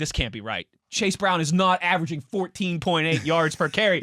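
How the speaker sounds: usual speaking voice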